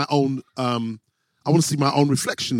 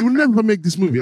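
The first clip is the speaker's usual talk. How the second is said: imitated voice, higher pitch; 6 semitones higher, 3 dB louder than usual. Retelling what a studio owner told him: imitating an Italian studio owner. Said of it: "This is how he talks".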